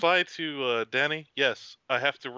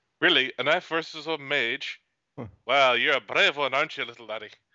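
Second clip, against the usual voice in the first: put-on Scottish-accented dwarf voice. Voicing the dwarf as he faces the nervous young lad: scottish accent. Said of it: "Nice, Scottish".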